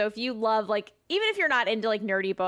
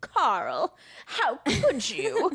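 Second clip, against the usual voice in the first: very drawn-out, high, slow, swooping funny cat voice; 6 semitones higher than usual. Describing the audiobook's cat character and doing her funny voice. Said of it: "She talks like this".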